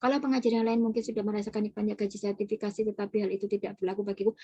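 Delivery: hurried, flat reading with no feeling. Demonstrating how an editor should not read their own writing: reading too fast. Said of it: "kita nggak boleh baca cepet-cepetan ... Maka kita nggak bisa tuh bacanya gini".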